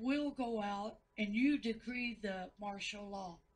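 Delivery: ordinary talk, nothing marked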